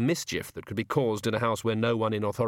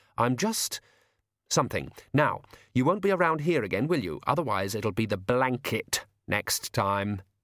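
usual speaking voice

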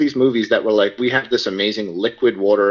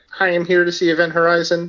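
high, flat, mechanical robotic monotone; 7 semitones higher than usual. Retelling asking to see a film at sixteen: imitating own robot-like voice. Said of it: "Why are you talking like a robot?".

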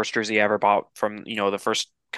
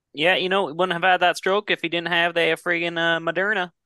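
fake, put-on Southern drawl, pitched up; 8 semitones higher than usual. Joking about a player's stroke and the vaccine: put-on southern accent. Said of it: "I like your southern accent".

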